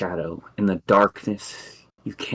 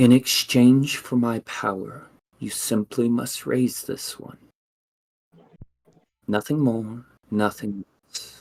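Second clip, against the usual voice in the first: spirit voice sounding like fallen leaves; 3 semitones higher than usual. A spirit hands over a shadowy egg inside the player's mind, in a voice like fallen leaves. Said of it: "She says, / and you hear inside your mind a voice like fallen leaves, / and you hear inside your mind a voice like fallen leaves".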